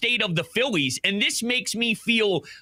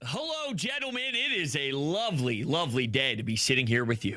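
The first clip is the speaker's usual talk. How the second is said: slow, stiff, prim, buttoned-up formal manner; 8 semitones lower, 7 dB quieter than usual. Greeting the hosts on joining the show, buttoned-up formal tone. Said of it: "why you sound all buttoned up?".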